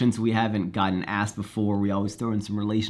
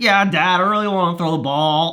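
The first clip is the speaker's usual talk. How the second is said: raised, high-pitched dog voice; 8 semitones higher, 6 dB louder than usual. Showing how he answers himself as his dog: voicing his dog Dude. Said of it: "that's dude's voice".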